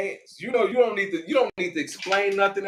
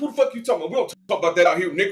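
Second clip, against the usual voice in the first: put-on, furious, rattled-off fast, extremely mad tirade. Speaker acts out a man suddenly turning extremely mad, retelling him extremely mad. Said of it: "went from being like extremely mad".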